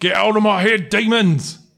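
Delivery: high-pitched yelling character voice. Voicing a confused father who yells at a player. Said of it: "he yells again".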